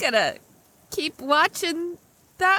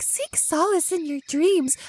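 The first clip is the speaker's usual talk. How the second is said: strange, weird, creepy put-on girl voice. Retelling what a little cloaked girl said: imitating a weird faked voice. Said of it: "a weird voice".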